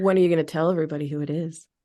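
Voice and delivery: intrigued voice. Asking when everybody will be told who the new coach is: intrigue voice. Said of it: "that was my intrigue voice".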